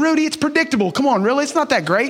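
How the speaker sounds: light, joking ribbing. A speaker rating sports movies for listeners, teasing. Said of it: "I'm just teasing".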